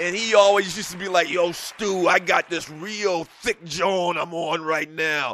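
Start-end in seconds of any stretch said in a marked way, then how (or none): 1.3-5.4 slow, drawn-out, casual Philadelphia slang talk. Retelling how his line brother from Philly used to talk, imitating Guat. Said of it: "I'm not exaggerating how he talks".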